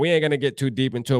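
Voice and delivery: ordinary delivery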